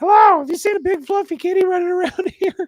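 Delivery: very high, loud falsetto doll voice. Retelling how the son starts playing with the dolls: Bobby's falsetto doll voice. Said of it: "he goes to this falsetto bo- voice".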